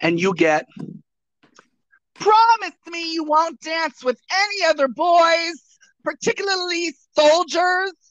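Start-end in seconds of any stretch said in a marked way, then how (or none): 2.1-7.9 very high, bright, pingy voice with sibilant S. Recreating a line in a voice made to travel: higher, pingy voice, sibilant s. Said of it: "to be higher and to make my voice more pingy so that it would travel more, combined with perhaps a little bit of a sibilant S".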